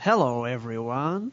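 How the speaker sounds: Yankee-style American accent. Asked on the show to demonstrate an American accent, put-on Yankee accent. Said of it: "A Yankee accent".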